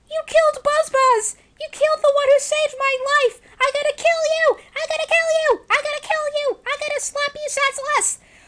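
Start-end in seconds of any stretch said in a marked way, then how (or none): 3.6-8.1 shouting, pitched higher. Voicing a game character furious at a killer: shouting in character. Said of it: "I totally ruined my voice by saying that".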